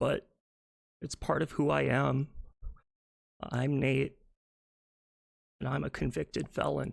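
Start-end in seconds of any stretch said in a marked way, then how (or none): 3.4-6.9 speaking through tears, tearful and crying. Confessing a past crime on camera, crying while talking. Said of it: "I'm a minute in and I'm already crying".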